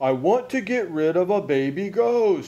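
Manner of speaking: loud, high-pitched shout, stretched out long. A man on the phone to the police shouts his request: shouted. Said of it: "shouted Mr".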